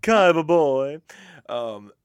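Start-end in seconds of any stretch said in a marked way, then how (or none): 0.0-1.0 loud, theatrical, belted anime dub voice. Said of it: "it kinda sounds like Pegasus from Yu-Gi-Oh!".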